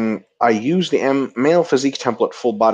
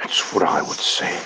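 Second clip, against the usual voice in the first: shoddy, breathy film-star voice; 4 semitones lower, 5 dB quieter than usual. Repeating a line in a really shitty Tom Hardy impression. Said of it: "my really shitty Tom Hardy impression".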